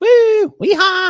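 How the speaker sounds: high, loud, excited whooping cheer.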